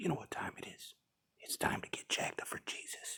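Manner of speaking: hushed whisper. Speaking to camera while deer hunting with a boy, whispering. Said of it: "we're out here whispering".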